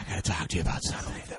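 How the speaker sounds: secretive, hushed, breathy whisper, very close. Joking after being told another speaker's whisper carries on the mic: whispering. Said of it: "Why are we whispering?".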